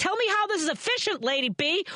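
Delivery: high-pitched yell. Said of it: "Why am I yelling at you?".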